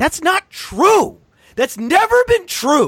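high, shouted, frantic rant. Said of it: "here's me losing my mind".

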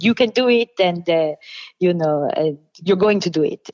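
put-on French accent. Saying which character they resemble most, the speaker does Monique's French accent. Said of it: "It's a French accent".

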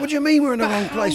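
put-on angry yell. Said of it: "he's yelling at him".

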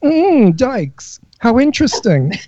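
slow, lingering, campy drawl with exaggerated flair. Imitating what a queen would say to guests: imitating a queen. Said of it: "a queen would never say that. He'd say".

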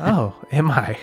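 acted ethereal goddess voice. Voicing a goddess answering a player's compliment: voicing Melora. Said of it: "And she go-".

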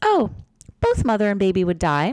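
bright, breezy, matter-of-fact, chipper, sing-song tone. Retelling the answer to a question about C-sections, imitating a chipper tone. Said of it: "she got really chipper".

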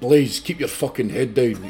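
angry biker voice. Retelling what he was told in the back of a car at the gate, mad biker voice. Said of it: "he's mad biker voice".

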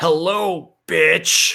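loud, mad killer-doll voice, belted out. Answering what the doll said to the lady: Brad Dourif voice as Chucky. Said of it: "in the most Brad Dourif-y voice".

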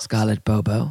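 very low, dead serious voice. Imagining a spy saying someone's name: serious James Bond voice. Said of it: "imagine James Bond coming up to you and saying".

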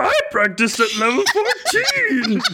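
high put-on puppet monster voice. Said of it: "You sound like Grover".

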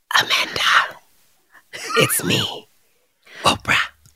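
eerie, slow, drawn-out, ominous whisper. Replaying the same line as it was described: imitating an ominous whisper. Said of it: "Ominously whispering".

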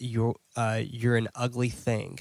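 ordinary talk, nothing marked

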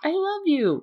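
high, little, budgie-like bird voice.

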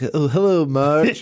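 nerdy cartoon guy voice. Describing a man who looks like Marge's high school boyfriend on The Simpsons: Jon Lovitz Simpsons nerd voice. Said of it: "he looks like the nerdy guy".

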